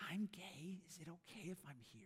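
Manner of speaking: very quiet, hushed whisper. Retelling a question someone asked at a church event: imitating someone whispering. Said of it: "started whispering".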